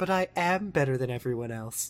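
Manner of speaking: movie psychopath, serial killer villain voice. Retelling a show character's line in a Hannibal Lecter voice. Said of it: "she does, like, Hannibal lecture voice".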